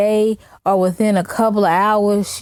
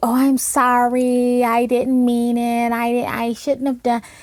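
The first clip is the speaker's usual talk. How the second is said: halting, slow, stumbling, backpedaling apologetic delivery; 3 semitones higher than usual. Mocking another speaker's apologies when confronted: mocking Vegas girl's apologizing. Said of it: "when people confront you on your channel and then you".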